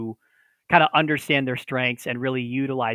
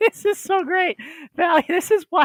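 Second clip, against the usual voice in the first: voice breaking, squeaking very high; 4 dB louder than usual. Reading a viewer comment aloud during a live stream, voice cracking. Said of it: "my voice is cracking".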